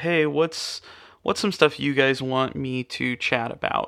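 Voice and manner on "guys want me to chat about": normal talking voice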